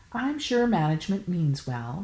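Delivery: ordinary delivery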